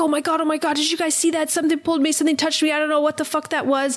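put-on heavy breathing. Retelling a guy who was pranking the group, imitating heavy breathing. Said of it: "he's breathing all heavily like".

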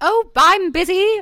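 very high, fake, put-on British accent. Imitating how the speaker's parents would answer: put-on British accent. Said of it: "I love your British accent".

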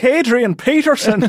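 put-on Minnesota accent that sounds Irish. Admitting he can't do the accent, a man tries anyway, bad Minnesota accent sounding Irish. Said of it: "It always comes out Irish when I try".

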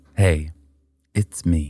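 ASMR artist voice. Showing how their asmr artist starts every video: imitating my asmr artist. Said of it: "She goes like this".

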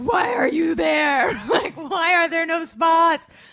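very loud, high, furious shouting yell. Speaker retells a man raging at parked cars in a full lot, retelling an angry yell. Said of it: "he's like yelling at the parked cars".

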